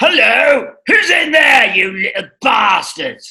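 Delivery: loud, high Cockney shout. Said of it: "It was old Cockney Harry".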